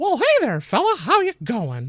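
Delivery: very high cartoon voice with swooping, bouncing pitch. Walking up to Mickey and greeting him, in a Mickey voice. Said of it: "I spoke to Mickey with the Mickey voice".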